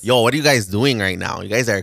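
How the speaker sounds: Toronto-style accent. Asked by friends to show it, a speaker does a Toronto accent. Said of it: "let me do it".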